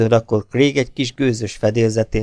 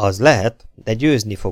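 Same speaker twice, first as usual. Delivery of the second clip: ordinary delivery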